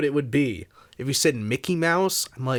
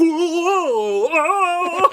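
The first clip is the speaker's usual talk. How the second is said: mock dumb character voice, higher and louder; 14 semitones higher, 5 dB louder than usual. Retelling a film scene, imitating a character's awful voice. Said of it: "the character had an awful voice".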